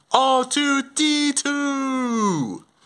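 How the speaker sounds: slow, drawn-out shout.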